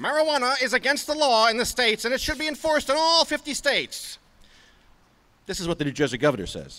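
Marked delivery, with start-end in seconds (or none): 0.0-4.2 very high, squeaky put-on voice. Quoting the New Jersey governor on marijuana law: Harry Anslinger voice. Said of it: "I'm gonna do this in a Harry Anslinger voice".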